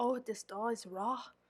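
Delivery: terrible, bad, fake put-on British accent. Testing English muffins for raw dough, terrible British accent as Paul Hollywood. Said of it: "Sorry for my terrible British accent".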